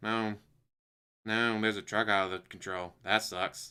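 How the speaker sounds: bone-dry, low, flat deadpan with no alarm. Showing how a person might react to a runaway truck, deadpan. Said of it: "there's a way to do it deadpan like that".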